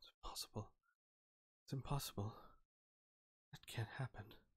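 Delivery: soft, whispered, muttering voice. Game master voicing a woman as the player walks away, muttering to herself. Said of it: "you hear her muttering to herself".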